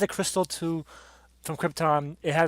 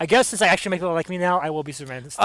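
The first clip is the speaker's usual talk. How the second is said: ordinary delivery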